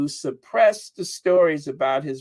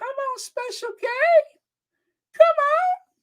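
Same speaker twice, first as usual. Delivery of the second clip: very high-pitched, eager rooting voice. Retelling own past words: own voice going really high. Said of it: "My voice got really high".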